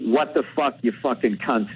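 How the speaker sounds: ordinary delivery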